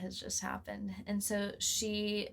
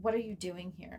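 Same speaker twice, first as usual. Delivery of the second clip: mock-scared, acted fear. Retelling a woman's reaction to finding her in the woman's office, imitating someone acting scared. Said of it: "she like acted scared".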